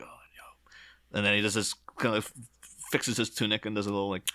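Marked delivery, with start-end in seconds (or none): 0.0-1.2 very soft, close whisper, as if into an ear. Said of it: "he's whispering in his ear".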